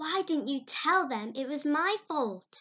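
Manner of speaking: insistent, demanding tone. Anne questions Diana about who was to blame, demanding. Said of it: "Demanded Anne".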